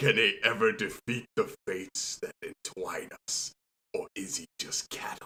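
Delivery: imitated deep voice. Recalling how the show's first episode starts: imitating a deep voice. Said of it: "you just hear that deep voice go".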